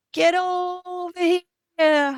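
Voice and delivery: put-on very high, kind, loving, cheerful voice. Recalling hearing a late grandfather call out, retelling Gramps's loving call. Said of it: "in a very loving, kind, cheerful voice".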